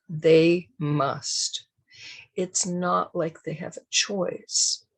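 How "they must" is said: must stressed hard, slow and firm. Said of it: "I emphasize the word must".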